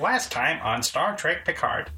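synthetic ship-computer voice, like a computer announcer. Recalling how the show's episode recap was announced: Star Trek: Picard computer voice. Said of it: "it was the computer voice that did it".

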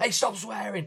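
very high, sarcastic, yelled telling-off. Retelling how he told someone to stop swearing as everyone giggled: retelling a sarcastic shout. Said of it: "what I gathered to be sarcastically shouting".

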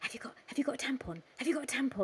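high-pitched stage whisper. Retelling a woman going round asking the women: imitating someone whispering.

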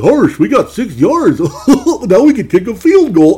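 very high, loud, swooping, silly cartoon voice. Narrating a football check-down situation, done in a Goofy voice. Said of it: "I just started doing the goofy voice".

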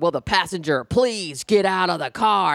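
very angry put-on cop voice. Retelling being pulled over, quoting the cop ordering the passenger out: imitating an angry cop voice. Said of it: "this very angry cop voice going".

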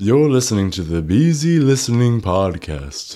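loud, high, spooky horror-film announcer voice. A Halloween podcast guest, asked to introduce the show, does a Vincent Price voice. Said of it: "I can do my Vincent Price voice".

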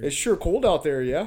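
imitated Canadian accent. Trying out the accent being discussed: put-on Canadian accent. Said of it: "No, we're doing Canada".

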